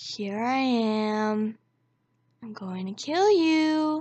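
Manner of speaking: very slow, sinister, creepy, "am" stretched. Retelling a stranger's threat outside the tent at night: creepiest voice imaginable. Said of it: "in the creepiest voice you could ever imagine".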